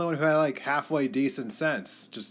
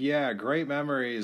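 ordinary talk

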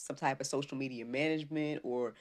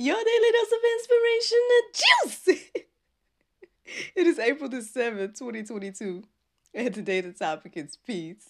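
giggling through words, higher and louder; 10 semitones higher, 9 dB louder than usual. Opening the daily episode, laughing while talking. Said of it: "I'm just done tickled myself this morning".

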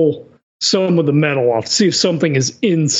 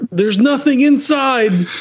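high-pitched yell in a character voice; 7 semitones higher than usual. Voicing a character who yells out after an attack: yelling in character. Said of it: "he just yells out".

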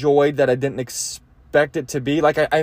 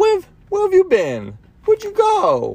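annoying put-on voice, much higher. Acting out an annoying person approaching an old high school friend, in that annoying voice. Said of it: "you even do that voice".

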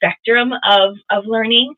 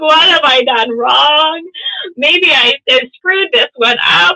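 put-on weepy crying, high, loud, tearful; 6 semitones higher, 5 dB louder than usual. A homeschool mom retells her five-year-old not knowing his letters: imitating own crying. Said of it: "And I'm like crying".

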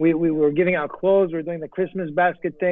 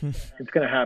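put-on whisper, lower and quieter; 4 semitones lower, 6 dB quieter than usual. Retelling what a city council member secretly said: imitating a whisper. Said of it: "he whispered to me".

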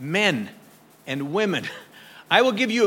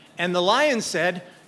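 plain

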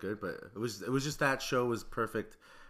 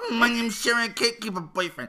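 very high, very loud, shrill llama-like bleat; 13 semitones higher, 11 dB louder than usual. Mocking the other speaker's self-introduction, imitating Sherry like a llama in heat. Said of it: "Why do I sound like a fucking llama in heat?".

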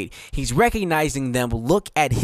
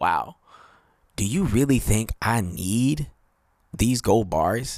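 mock underwhelmed, slow, unimpressed tone; 3 semitones lower than usual. Acting out Jesus watching people give: voicing Jesus, unimpressed. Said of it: "Jesus is looking at these people like".

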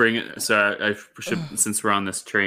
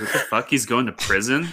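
normal talking voice

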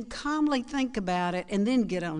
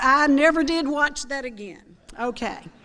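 normal talking voice

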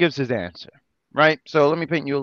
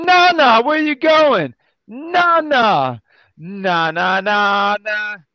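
put-on madman voice, higher pitch; 6 semitones higher than usual. Retelling Sting calling after Nana as she escapes: imitating madman Sting. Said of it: "Sting is a madman".

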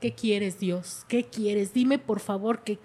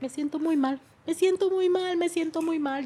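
mock crying, much higher pitch; 6 semitones higher than usual. Parent retells what their daughter said about meeting her sister, imitating her crying. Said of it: "y me dijo llorando".

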